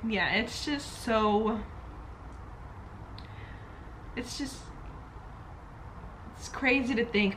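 slow, choked-up words, voice catching, holding back tears. Talking to the audience while getting emotional, choking up. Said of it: "I don't want to cry".

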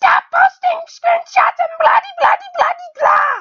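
very high, shrill, head-off screaming tirade. Mocking how he rants about people posting screenshots of him, do a screaming Nate Spidgewood impression. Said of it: "this is my best Nate Spidgewood impression".

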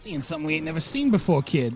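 heavily faked, very fake Boston accent. Quoting the guy from the boston sunfish video, fake boston accent. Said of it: "He has a very fake Boston accent".

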